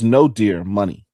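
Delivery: ordinary delivery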